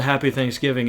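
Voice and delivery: ordinary talk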